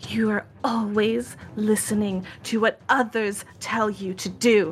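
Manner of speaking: wrathful, reproachful, accusing voice. Narrating a game, voicing a voice from somewhere near Arafe, angry. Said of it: "an angry voice emanates".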